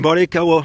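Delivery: big morning voice.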